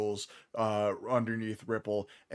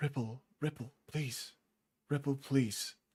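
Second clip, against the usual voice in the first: half-whispered, pleading, repeated words; 3 semitones higher, 5 dB quieter than usual. Game master voicing a familiar voice heard at the back of the head, half-whispering. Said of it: "you just feel a couple whispers".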